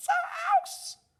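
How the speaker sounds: tiny, squeaking mouse voice, very high. Reading a children's story aloud, the mother mouse replies in a squeaky mouse voice. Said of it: "squeaked the mother mouse".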